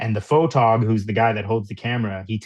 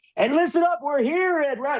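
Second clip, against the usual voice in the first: mock wrestling promo shouting, higher. Contrasting news reporting with wrestling promos: imitating a yelling wrestling promo. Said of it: "Stop yelling at the mic".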